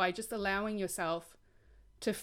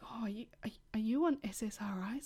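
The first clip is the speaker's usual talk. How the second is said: quiet whispering. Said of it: "whisper, whisper".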